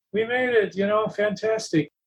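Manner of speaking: excited, celebrating whoop at normal talking volume. Retelling a guide celebrating the arrival: imitating someone screaming. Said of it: "he starts screaming".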